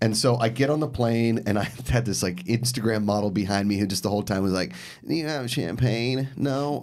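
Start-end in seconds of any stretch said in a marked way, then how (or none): 5.1-6.8 weird creaky vocal fry, slow drawl. Retelling an Instagram model seated behind on a plane, imitating weird vocal fry. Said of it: "she had this weird vocal fry".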